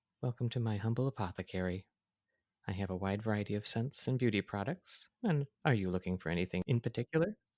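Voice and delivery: plain reading voice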